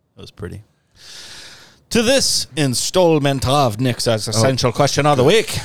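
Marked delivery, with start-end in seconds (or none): 1.9-5.6 slight put-on Scottish accent. Announcing the weekly question segment, slight put-on Scottish accent. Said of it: "It's a little Scottish".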